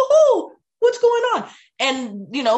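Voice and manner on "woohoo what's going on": squeaked out, high-pitched and loud. Showing parents a silly voice for restless kids, Mickey Mouse voice. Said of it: "I have Mickey Mouse puppets".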